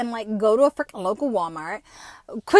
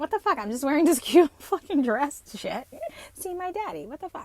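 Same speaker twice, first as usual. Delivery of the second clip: put-on voice of an eighteen-year-old; 3 semitones higher, 5 dB quieter than usual. Retelling a past reaction to a dress rule, imitating own eighteen-year-old self. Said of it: "an eighteen-year-old going".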